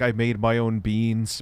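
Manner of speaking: ordinary delivery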